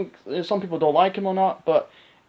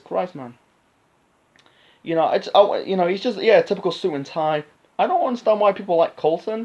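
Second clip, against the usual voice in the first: ordinary talk, nothing marked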